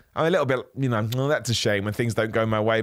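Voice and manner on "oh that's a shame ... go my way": ordinary talk, nothing marked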